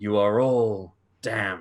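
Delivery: snake-like serpentine edge on the words. Voicing a bleeding, wounded man who turns and curses the group: voice with a serpentine edge. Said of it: "there's a certain serpentine edge to it".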